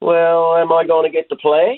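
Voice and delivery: Newfoundland Southern Shore twang, high. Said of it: "in her Southern Shore twang".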